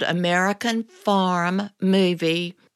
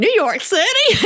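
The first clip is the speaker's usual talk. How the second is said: put-on very high, loud, folksy country-boy marveling exclamation; 14 semitones higher, 6 dB louder than usual. Speaker retelling his reply to a man from new york city, typical country way. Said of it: "in my typical country way".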